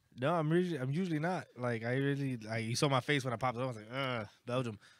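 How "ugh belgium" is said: usual speaking voice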